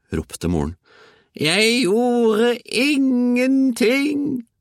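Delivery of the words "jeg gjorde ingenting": put-on very high, cackling old hag voice. Narrating a story, the old woman answers the mother, cackling. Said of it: "kaklet den gamle kjæringa".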